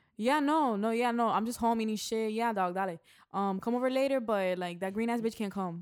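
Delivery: Miami-style accent. Asked to hear it, a speaker says a typical sentence in a Miami accent. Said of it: "I can say the most Miami sense. Sentence right now".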